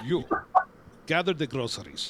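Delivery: put-on thick, heavily laid-on Russian accent. Telling a story, the speaker voices a giantess speaking to a fire giant, heavy Russian accent. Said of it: "says in a heavy Russian accent".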